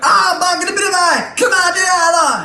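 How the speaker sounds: shrill, very high, drawn-out goblin screeching yell. Voicing goblins in a crowd as the party walks through: goblins screaming. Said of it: "screaming at you".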